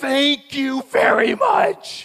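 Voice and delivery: very loud, high, shrill, drawn-out sarcastic scream. Retelling a car cutting in front of them, imitating Maggie screaming. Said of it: "Maggie screams".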